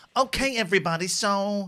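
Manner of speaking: put-on English accent. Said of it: "me doing [name] doing an English accent".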